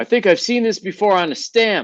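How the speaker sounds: very high, loud shout. Voicing a character who calls out to teammates mid-fight: character yelling to teammates. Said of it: "he's gonna yell out to his teammates".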